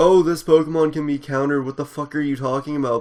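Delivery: mocking complaining tone. Retelling what people say after the ban, imitating people complaining. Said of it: "bitching and complaining about".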